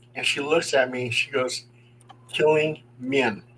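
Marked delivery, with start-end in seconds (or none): 2.4-3.4 mimicked flat, deadpan delivery. Retelling a woman's answer about her visions, imitating her deadpan delivery. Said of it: "she was very deadpan".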